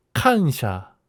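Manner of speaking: kansha said with stress on first syllable kan. Learning the Japanese word kansha, with stress on first syllable kan. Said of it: "이 카를 강조해야 된다고 하는데 칸샤 이런 식으로 발음하나 봐요".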